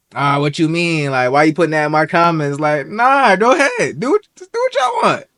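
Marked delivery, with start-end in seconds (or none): none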